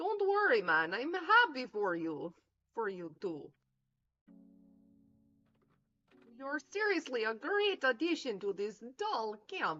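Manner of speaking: deliberately strange, odd, high, swooping voice. Voicing a camp character's line in a reading, weird-sounding voice. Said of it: "It's just supposed to sound weird".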